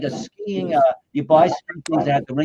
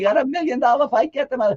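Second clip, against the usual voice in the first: mock shrill panicked yelling, very high; 11 semitones higher than usual. Telling a fight story, speaker reenacts Don King on the phone; retelling Don King screaming. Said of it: "Don King screaming".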